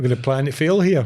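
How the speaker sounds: ordinary talk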